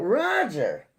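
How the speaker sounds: high-pitched, loud yell.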